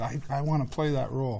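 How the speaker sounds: usual speaking voice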